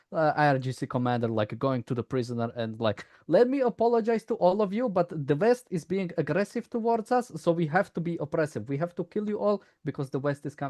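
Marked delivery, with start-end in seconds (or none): 3.2-10.7 put-on Arabic accent, pitched very high. Imagining a regime commander addressing prisoners, in an Arabic accent. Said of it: "This is more like Arabic accent".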